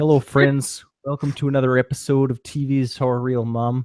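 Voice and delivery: attempted North Dakota accent. Podcast host restarting the episode intro beside a co-host: attempted North Dakota accent. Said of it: "was gonna try to do a North Dakota accent".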